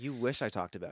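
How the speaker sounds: ordinary talk, nothing marked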